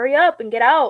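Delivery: mock impatient, fed-up tone. Retelling what she said when she was just done, retelling an impatient demand. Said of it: "I was just so, like, done".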